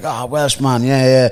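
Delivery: loud mock French-sounding accent. Retelling what a loud bank manager said to him: loud French-sounding accent. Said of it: "he sounded French ... loud as fuck".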